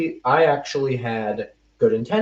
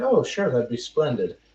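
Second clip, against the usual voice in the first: put-on British accent done as a bit. Retelling accepting a woman's offer to exchange contact information, in a british accent. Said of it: "say that in a British accent".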